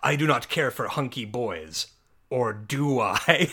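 deep, slow villain voice, each word dragged out. Recounting a favorite movie bit, doing Psycho Goreman's booming reply to Mimi. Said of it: "Psycho Goreman booms like".

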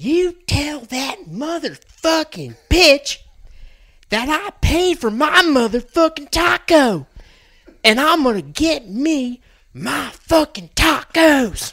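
put-on very high, shrill, furious loud screaming. Retelling what a woman yelled while punching a pickup window: retelling a yell. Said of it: "this is what she's yelling".

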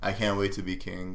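plain

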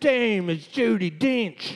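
put-on, high trailer park Southern drawl. During a quiz game, giving the answer in a trailer park southern drawl. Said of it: "Trailer Park Southern, like drawl".

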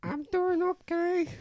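very high, side-of-mouth ventriloquist dummy voice. Showing a partner how to make their arm talk, in a ventriloquist dummy voice. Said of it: "hold your arm up like it's a ventriloquist dummy and talk at the side of your mouth".

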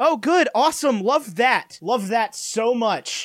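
slow, sarcastic, mock gushing enthusiasm. Reacting to news from the other speaker: sarcastic. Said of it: "I can't tell if you're being sarcastic or not".

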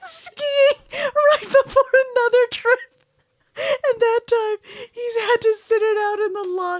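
talking through laughter. Telling a story about someone's ski injuries, laughing while talking. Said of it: "I'm sorry for laughing".

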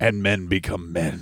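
low, slow, deep gravelly growling voice. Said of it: "that deep, gravelly voice".

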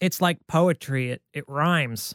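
slow director voice, every word drawn out. Quoting a line about a film series rhyming: George Lucas impression. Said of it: "That was my George Lucas impression".

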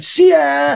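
put-on high karate shout in Birmingham accent. Retelling recording fighter sounds as at karate class: karate shout in Birmingham accent. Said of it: "what I would do at my karate class".

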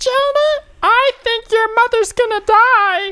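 very high, squeaky little chipmunk voice. Showing how to tell Jonah bad news, in a chipmunk voice. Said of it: "just make a chipmunk".

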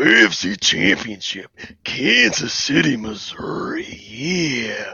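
every word stretched, heavy stress on "yeah". Giving a football prediction on request: Macho Man Randy Savage voice. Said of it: "I want your A F C prediction and macho voice".

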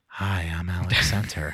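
hushed, soft, slow, gentle welcoming tone. Recalling a first-ever podcast appearance, matching the host's tone, imitating a soft welcoming tone. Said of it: "I matched her tone".

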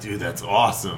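plain

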